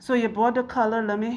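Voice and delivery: put-on meek, timid, weak puppy-like voice. Retelling how illness made them talk to a client: imitating own meek puppy-like voice. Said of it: "So I'm talking like".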